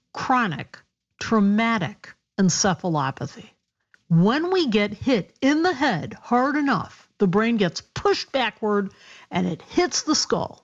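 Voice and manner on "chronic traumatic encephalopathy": slow, careful, each syllable laid out deliberately. A doctor guest, answering the host's question, says the term slowly. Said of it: "Let me say it slowly".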